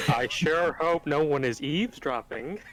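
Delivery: stagey, pointedly obvious voice. Trying to coax someone out from behind a door, speak in a loud, obvious voice. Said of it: "Speaking in a loud, obvious voice".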